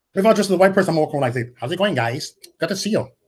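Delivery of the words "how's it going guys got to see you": put-on accent sounding Chinese. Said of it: "Now you sound Chinese".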